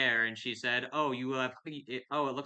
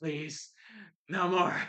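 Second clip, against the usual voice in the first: high, exhausted, worn-out pleading; 6 semitones higher than usual. Narrating the game as a Dratini flops on the ground, exhausted Dratini pleading. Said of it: "the Dratini is just like sweating".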